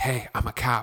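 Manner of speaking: hushed aside, just breath, whispered. Retelling how a cop in a movie tells the security guy, imitating a whisper. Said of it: "he's whispering to the security guy".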